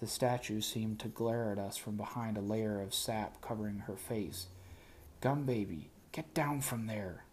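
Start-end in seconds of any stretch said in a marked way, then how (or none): 5.2-7.1 hushed stage whisper. The narrator urges a companion to get down from a statue: stage whisper. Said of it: "I stage whispered".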